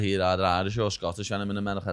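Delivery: ordinary delivery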